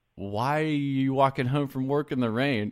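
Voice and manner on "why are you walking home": plain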